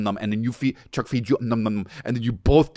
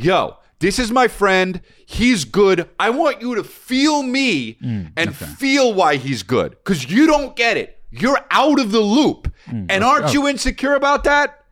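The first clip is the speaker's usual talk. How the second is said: full-on, very high, swooping domineering bossy yell; 11 semitones higher, 4 dB louder than usual. Telling someone how to act the boss about inviting a guest, yelling. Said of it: "You're completely yelling".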